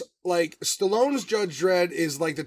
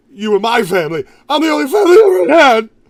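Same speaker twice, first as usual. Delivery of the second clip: loud voice pitched up, cracking; 8 semitones higher, 13 dB louder than usual. Imitating Rico's emotional scene from the movie: imitating Rico's voice cracking. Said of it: "where his voice cracks".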